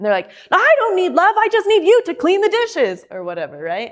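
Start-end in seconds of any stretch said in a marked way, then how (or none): 0.5-3.0 acted, worked-up, agitated, very high and swooping. Explaining how emotional people react, imitating a worked-up person. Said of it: "They're worked up".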